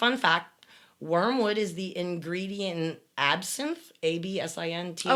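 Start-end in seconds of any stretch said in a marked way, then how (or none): none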